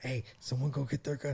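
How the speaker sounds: soft, hushed stage half-whisper. Retelling hiding in tents from a sleeping bear: imitating a half-whisper.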